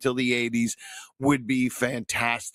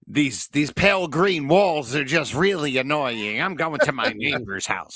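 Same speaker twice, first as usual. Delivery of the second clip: campy comedian voice, higher and louder; 4 semitones higher, 5 dB louder than usual. Joking about a lost ghost annoyed by the walls, Paul Lynde impression. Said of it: "I'm doing Paul Lynn".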